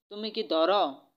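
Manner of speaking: usual speaking voice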